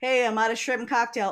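loud, carrying call-out yell. Retelling what the guys in the kitchen shout: imitating kitchen staff yelling. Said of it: "hear the guys in the kitchen yelling".

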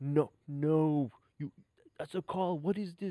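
acted-out furious, angry, drawn-out protesting tone. Retelling a poker player's reaction to an opponent's angle: imitating an angry player. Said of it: "And the guy got so mad".

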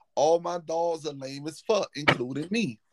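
ordinary talk

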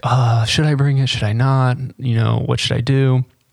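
usual speaking voice

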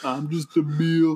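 slowly stretched, high-pitched delivery. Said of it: "Why you sound like [name] when you did that?".

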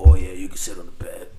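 very low, very deep, loud, booming woman's voice. Retelling a story, quoting the woman in it, doing her voice deeper. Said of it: "I'm going to do her voice like a deeper voice".

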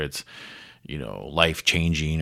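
usual speaking voice

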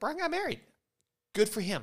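high, breezy, dismissive mock reaction. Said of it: "they're just gonna be like".

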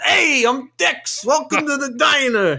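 put-on high-pitched Brooklyn accent. Acting out Dex greeting someone at the diner, in Dex's Brooklyn accent. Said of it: "turning to be like someone from Brooklyn".

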